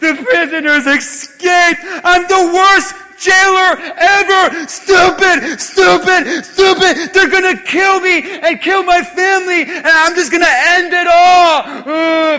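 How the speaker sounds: loud, despairing, self-pitying, all drawn out. Retelling a Bible story, acting out a jailer on his knees, despairing. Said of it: "he's like, he's on his knees".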